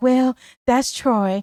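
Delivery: easygoing, mild, gentle-mannered delivery. Acting out how she would answer when asked who this man is, imitating Sheila's soft voice. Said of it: "You know how Sheila talks with that soft voice".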